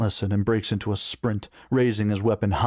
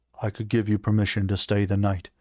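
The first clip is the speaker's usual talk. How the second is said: plain reading voice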